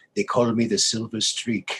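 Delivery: put-on French accent. Retelling the reply of the man who taught him to ski, French accent. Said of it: "And he had a French accent".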